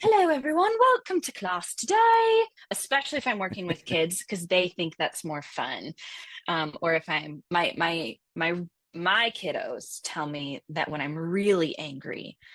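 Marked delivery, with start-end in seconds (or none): 0.0-2.4 very high, loud, silly sing-song voice. A teacher demonstrating greeting the students, in a teacher's put-on voice. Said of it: "I might just start talking to my students in some kind of voice".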